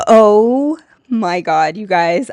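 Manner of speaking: very slow, loud, drawn-out talk through laughter. Telling viewers about an Instagram page she found, laughing while talking. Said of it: "I'm laughing".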